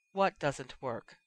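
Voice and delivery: soft, hushed voice. A woman steps close and faces the man who just snapped at her, asking quietly. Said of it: "she asked quietly".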